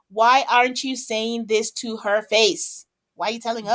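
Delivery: ordinary delivery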